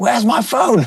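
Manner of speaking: very high, calling-out holler. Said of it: "kind of like shouted".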